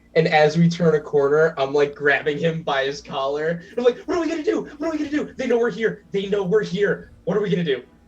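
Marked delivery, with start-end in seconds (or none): 4.1-7.8 stressed-out, panicky, rushed, frantic repeating. Walking toward the rooms with Louise, grabbing his collar, stressed and panicked. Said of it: "I'm stressed".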